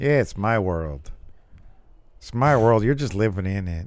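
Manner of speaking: bored, disinterested, can't-be-bothered tone. Imitating a wrestler's catchphrase: imitating a disinterested voice. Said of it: "With his disinterested voice".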